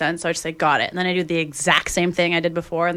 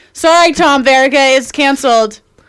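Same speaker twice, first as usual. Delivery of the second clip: very loud, pitched-up, sloppy, fake-drunk slur; 8 semitones higher, 11 dB louder than usual. Joking that the next guest's appearance is canceled: fake drunk slurring. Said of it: "She's slurring her words".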